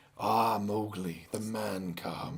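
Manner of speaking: very low, slow, calm, unhurried drawl. Retelling how the powerful villain downplayed it: calm Shere Khan voice. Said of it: "he had this kind of, like, calmness to his voice".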